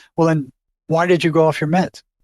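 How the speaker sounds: plain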